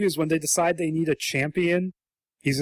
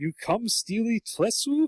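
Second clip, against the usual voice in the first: fake Chinese accent; 5 semitones higher than usual. Describing a Chinese-style dragon character's speech, doing his stereotyped Chinese accent. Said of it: "this accent comes out of his mouth".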